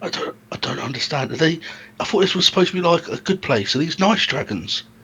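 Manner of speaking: whispered throughout, very quiet and hushed. A player talking over the quests with the group, whispering. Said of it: "Still trying to whisper".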